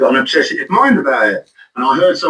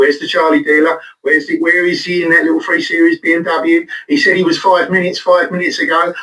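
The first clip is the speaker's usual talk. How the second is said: plain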